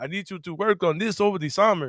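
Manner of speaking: bad Finnish accent. Quoting a potential hire giving an instruction, sounding like Count Chocula. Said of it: "I know I'm sounding kind of Count Chocula".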